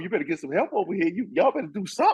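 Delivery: high taunting voice. Retelling how a player taunted defenders after scoring: imitating Ricky Pierce trash talking. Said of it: "Ricky Pierce would talk some trash to you".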